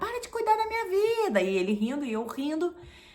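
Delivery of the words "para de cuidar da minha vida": play-acted shrill, shouted yelling, very high. Retelling what she yelled back from the shower: imitating own past yelling. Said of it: "eu comecei a gritar de lá".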